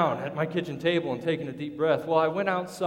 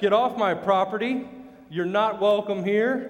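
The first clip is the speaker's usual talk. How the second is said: controlled, firm, loud shouting voice; 4 semitones higher, 4 dB louder than usual. Speaker recounts ordering a guy off their property, retelling a shout. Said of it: "Shouting at him".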